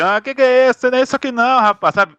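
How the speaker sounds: very high, nuanced, movie-dub style voice. Praising a dubber's voice nuances in Rocky: André Filho's Rocky dub voice. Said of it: "As nuances de voz que ele faz no rock".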